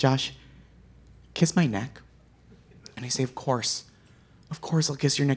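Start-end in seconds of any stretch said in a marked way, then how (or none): 0.0-2.0 imitated gentle, sweet, soft whisper. Speaker retells their girlfriend's words while spooning, imitating a gentle whisper. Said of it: "my girlfriend whispers so gently, so sweetly".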